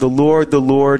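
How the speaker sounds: normal talking voice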